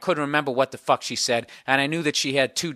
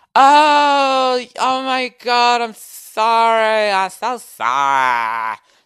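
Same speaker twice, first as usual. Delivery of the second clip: very high, very slow, lazy LA drawl; 9 semitones higher, 7 dB louder than usual. Retelling a lady's apology at the door: imitating lazy la speech. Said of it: "That fucking L A shit where you get lazy by the end of the sentence".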